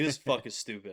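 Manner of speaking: put-on angry voice. Retelling climbing out of a creek soaked, imitating own angry words. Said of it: "I was so mad".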